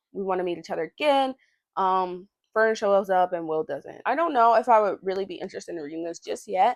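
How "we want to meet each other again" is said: usual speaking voice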